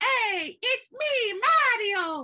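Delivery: very high, loud, slow, drawn-out belted call. Joking that the show feels like Super Mario: Mario voice. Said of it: "you hear Mario in the background".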